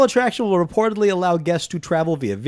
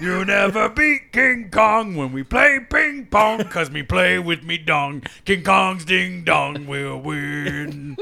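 put-on giant ape voice. Playing a giant ape welcoming everyone to his world: King Kong voice. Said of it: "New character for [name]".

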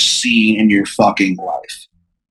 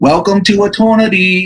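put-on high little kid voice, unable to pronounce r; 9 semitones higher than usual. Describing an afterlife scene, Beelzebub speaks to Danny: Beelzebub's child voice, no R's. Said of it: "Beelzebub talks with like a child's voice".

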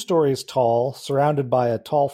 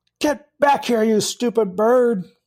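loud, high-pitched angry shouting. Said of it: "that he's shouting".

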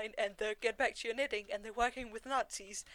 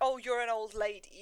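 put-on condescending voice. Quoting a character's dismissive line to a woman, imitating a condescending tone. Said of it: "in a very condescending way".

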